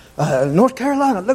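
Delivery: high-pitched, excited, showing-off chatter. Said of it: "she's talking about".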